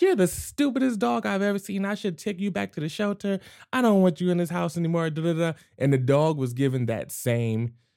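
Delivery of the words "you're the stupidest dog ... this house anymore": mock super happy, bright, giddy sweet-talk, pitched up. Retelling how a man insulted his dog in a sweet voice: imitating a sweet, happy tone. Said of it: "in that same pitch, in that same tone".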